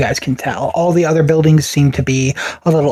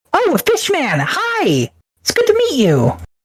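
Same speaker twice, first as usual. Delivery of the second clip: put-on very high, sing-song little kid voice; 14 semitones higher than usual. Narrator voicing the little one greeting fishman, little kid voice. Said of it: "the little one like walks up to you".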